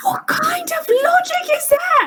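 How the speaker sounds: high, crying, outraged scream. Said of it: "you're still screaming".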